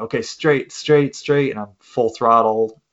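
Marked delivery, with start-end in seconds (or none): 0.0-1.5 insistent, repeated, high-pitched call. Retelling flying off a race track, retelling an instructor's yell. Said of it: "he's yelling".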